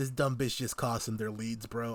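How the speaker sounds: ordinary talk, nothing marked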